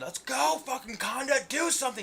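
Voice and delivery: put-on shrill, high, loud drunken yelling. Recounting getting drunk watching a fight, reenacting yelling at the fighters. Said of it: "I'm yelling".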